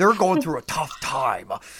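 imitated, put-on gruff guy voice. Mocking a game's excuse for its looks: imitating someone in a gruff voice. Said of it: "gruff guy voice? He sounded just like Morg".

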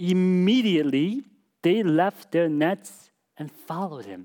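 slow, deliberate, unhurried reading aloud. Rereading a Bible verse aloud to the audience, reading slowly. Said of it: "Let's read that again slowly".

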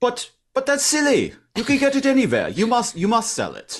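put-on German accent, very high and swooping. Retelling what a customer said about bread, put-on German accent. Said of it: "I like his German accent".

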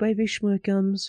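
put-on weird, high, soft baby talk voice. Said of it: "his voice went to this weirdest".

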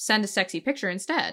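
ordinary talk, nothing marked

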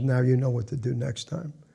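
plain

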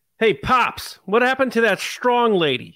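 put-on high-pitched New York accent. Reading out a line of dialogue for Grogu, Grogu with a New York accent. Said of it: "he has a New York accent".

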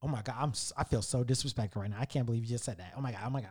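very low, very soft, offended, disgusted muttering. Retelling how the woman reacted when he refused to pay $25: imitating a disgusted woman. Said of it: "She looks at me so disgusted".

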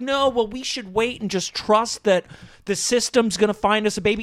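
ordinary delivery

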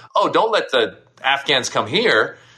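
ordinary talk

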